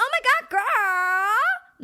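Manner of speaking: put-on very high, very slow valley girl drawl. Contrasting a softer tone with a valley girl voice: valley girl voice. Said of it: "not like".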